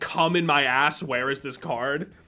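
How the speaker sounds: exasperated, irritated, mildly angry outburst. Retelling what friends misheard a friend yell: imitating a shout. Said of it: "thought he just shouted".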